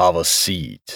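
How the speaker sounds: rough, gruff voice. Narrator reading Avakov offering Murphy a seat, gruff voice. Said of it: "he said in a gruff voice".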